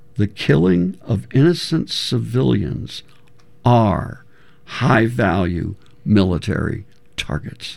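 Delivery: very slow, deliberate, drawn out word by word. Speaker making a point about warfare strategy; very slowly. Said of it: "I will say this very slowly".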